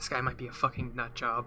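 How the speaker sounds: very quiet, barely audible half-whisper. Voicing Balder kneeling down to another character: half-whispering. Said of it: "actually whispers this time".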